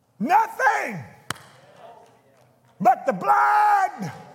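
showy dramatic pulpit delivery, swooping, "blood" drawn out. Speaking to the crowd without music: said dramatically. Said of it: "now I said that real dramatically".

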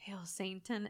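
put-on very quiet voice. Retelling a scary story about a woman holding a knife, imitating a very quiet voice. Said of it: "she's very quietly starts being like".

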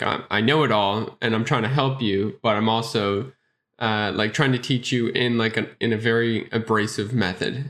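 plain

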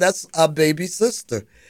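ordinary talk

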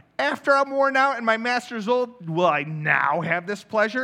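mocking, disbelieving sarcasm. Reading Sarah's words from the Bible aloud: sarcastic, voicing Sarah. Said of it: "that's how I imagine her saying it. It's sarcastic".

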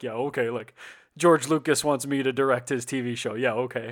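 mock scoffing, sarcastic, disbelieving tone. Retelling how he reacted when told george lucas asked for him: mock-sarcastic retelling. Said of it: "he's very sarcastic and he's like".

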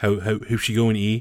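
Newfoundland accent. A newfoundlander demonstrates the stereotypical canadian accent. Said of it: "that stereotypical Canadian accent".

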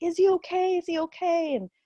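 put-on very high, drawn-out, slow tearful pleading. Retelling pleading for news during a Doppler exam, retelling crying plea. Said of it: "I remember like crying and saying like".

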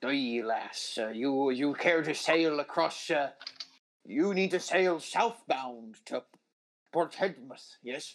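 put-on, mixed-up old sea-captain Scottish accent. Voicing a sea captain offering a lass passage south: muddled old scottish sea captain. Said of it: "You meet this old Scottish sea captain".

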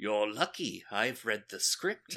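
put-on New Zealand accent. Retelling Peter Cushing's reply to Christopher Lee: Peter Cushing impression sounding New Zealand. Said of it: "can't do a Peter Cushing without making him sound like he's from New Zealand".

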